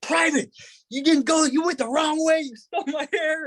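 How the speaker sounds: acted-out screaming rant, very high pitched, blaming. Speaker retells screaming at a private after being knocked out, retelling a scream. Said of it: "And then I start screaming".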